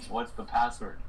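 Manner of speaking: normal talking voice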